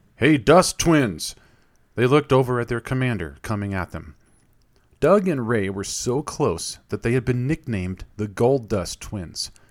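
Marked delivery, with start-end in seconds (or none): 0.2-1.4 big, loud, booming call. The commander calls out to the two friends from across the way, in a booming voice. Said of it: "heard a booming voice".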